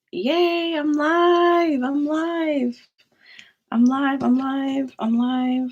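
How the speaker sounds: groggy, drowsy, slow, drawn-out voice. Streamer going live after taking an allergy pill, groggy. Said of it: "and I am so groggy".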